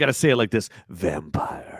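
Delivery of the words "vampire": whispered, breathy, dramatic movie trailer voice. Discussing a character called vampire, saying the name in a movie trailer voice. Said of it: "like your best movie trailer voice".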